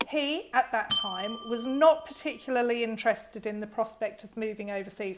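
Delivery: plain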